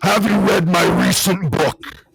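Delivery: soothing, spot-on celebrity impression voice. Imitating a politician speaking to the country: Jesse Ventura impression. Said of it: "It sounds just like him".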